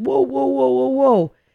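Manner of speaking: put-on high-pitched drunk yelp.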